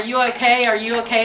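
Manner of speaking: ordinary delivery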